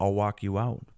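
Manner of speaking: normal talking voice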